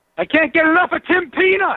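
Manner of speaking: pumped-up, high-energy, excited delivery. Recording the endorsement line again on request: high energy, excited endorsement. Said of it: "Can we get another one of those?".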